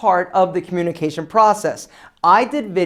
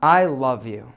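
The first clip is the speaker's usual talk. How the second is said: low, deep, sincere and deeply felt; 7 semitones lower than usual. Demonstrating how tone expresses feelings to would-be speakers, said with real feeling. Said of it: "Did you feel that?".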